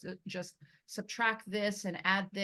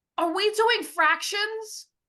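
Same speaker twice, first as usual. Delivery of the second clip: shrill, very high, very loud, furious tone; 14 semitones higher, 11 dB louder than usual. Retelling a student's words in an algebra class, imitating an angry student. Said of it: "one of my students got super angry".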